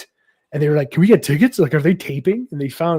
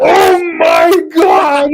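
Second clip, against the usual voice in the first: high, shouting, beside-himself, can't-believe-it freak-out; 14 semitones higher, 9 dB louder than usual. Retelling being called down to the stage: imitating Lon losing his mind. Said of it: "he's losing his mind".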